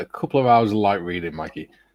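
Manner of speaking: normal talking voice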